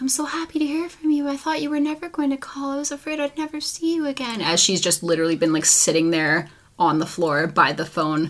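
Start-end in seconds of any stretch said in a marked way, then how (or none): 0.0-4.4 very high, sickly sweet, syrupy fake-nice tone. Speaker describing a movie, quoting a woman on the phone, in a mock-sweet voice. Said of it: "the sweet voice that's like".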